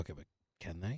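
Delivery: hushed whisper. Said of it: "you're whispering".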